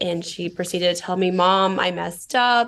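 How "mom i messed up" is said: mock sobbing, much slower. Mother retells her daughter's call, imitating her daughter crying and sobbing. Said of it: "crying and sobbing".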